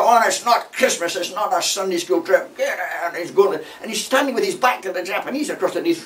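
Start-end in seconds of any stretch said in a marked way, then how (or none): 0.0-3.1 loud military-style officer shouting. Retelling how the beachmaster shouted at the convoy: imitating a captain shouting. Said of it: "he's shouting at us all".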